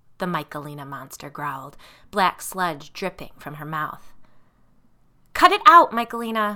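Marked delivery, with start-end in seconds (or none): 5.4-6.6 piercing, shrill, very loud shriek. Allison, penned in by the sisters, screams at Michaelina. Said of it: "Allison screamed".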